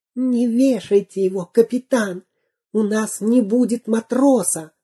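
in a whisper. Narrator reads a character whispering into the captain's ear: whispered. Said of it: "Дырка зашептал ему на ухо".

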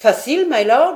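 very loud, high-pitched, scoffing, mocking jeer. A man answering a lord who says the proof will be easy: mocking tone. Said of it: "reprit Ayrton d'un ton railleur".

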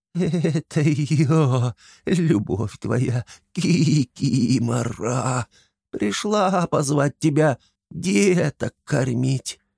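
thin, quavering, very slow bleating creature voice. Anton fools the drunk Flapiy by imitating the kikimora, thin quavering voice. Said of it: "подражая кикимори тонким дребезжащим голосом, проблеял".

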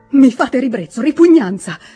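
loud, heated shouting. A woman answers the man begging her forgiveness, shouted, growing heated. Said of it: "gridò lei infervorandosi sempre più".

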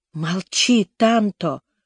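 begging in a whisper. Begging his brother to stop talking about the valley, pleading whisper. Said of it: "прошептал я умоляюще".

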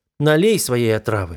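ordinary delivery

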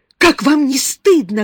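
high, very loud, despairing cry. After slapping a man who grabbed her, a woman shouts at him in despair. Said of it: "крикнула она с отчаянием".

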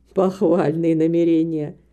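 contemptuous, through gritted teeth. A man responds to a woman's plan to live by her own work, contemptuous through gritted teeth. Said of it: "Презрительно процедил сквозь зубы мистер Грэм".

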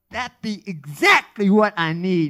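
sudden brightening, very loud and high. Hearing a suggestion of a protective charm, a man perks up. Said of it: "Curtis perked up".

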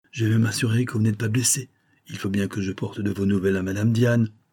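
plain reading voice

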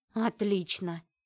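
muttering a complaint. Narrator voices a character reacting once the group recovers from shock, grumbling. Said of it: "проворчала Нария".

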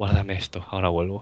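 imitated sweet little voice. Retelling a killer's line after he runs out of bullets, imitating a sweet little voice. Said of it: "con una voz así dulcecita".

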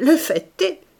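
snickering, scornful, high and loud sneer. Jory comments to his former companions, sneering. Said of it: "ricana Jory".

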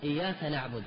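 ordinary talk

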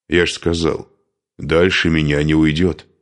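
plain

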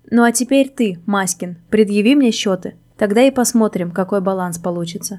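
ordinary delivery

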